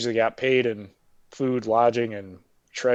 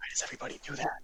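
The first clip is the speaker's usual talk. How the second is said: mock whisper, much quieter. Retelling what a man at the counter said to him, retelling a whisper. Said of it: "he's like whispering".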